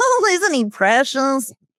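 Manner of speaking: slow, unhurried, drawn-out delivery. Retelling how another person reacts to the laughing: imitating David. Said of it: "David's like".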